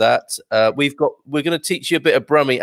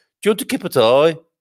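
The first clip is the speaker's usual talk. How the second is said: Birmingham accent, broad vowels on every word; 4 semitones higher than usual. Showing a listener how different places offer a cup of tea, now in a Birmingham accent. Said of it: "in Birmingham".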